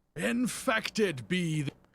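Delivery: very high-pitched, shrill, shouted reading. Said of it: "the shouty ones were real good".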